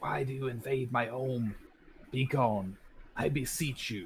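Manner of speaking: very ghostly, eerie, haunting voice. Narrating the scene, the speaker voices the ghostly man looking out at the listeners, very ghostly voice. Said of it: "in a very ghostly voice says".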